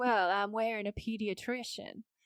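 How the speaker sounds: imitated Southern accent. Imitating how a character in the episode first spoke: imitating a Southern accent. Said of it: "but it was Southern".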